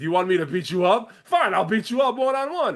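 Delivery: angry, fed-up, furious, taunting voice with rising pitch. Recapping a storyline, quoting one woman's challenge to another, retelling a furious challenge. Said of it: "So Becky's still furious".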